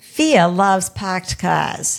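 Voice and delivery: loud put-on Boston accent, r dropped in "fear". A guest answering a question about growing older, in a Boston accent. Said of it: "I'm going to use my Boston accent for a second".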